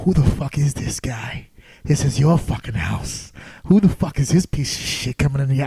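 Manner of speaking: voiced, urging stage whisper close to the ear. Retelling urging a wrestler before his entrance: retelling a whisper. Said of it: "I start whispering to him".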